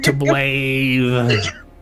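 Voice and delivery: high-pitched mumbling character voice.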